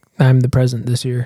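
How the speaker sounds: ordinary talk, nothing marked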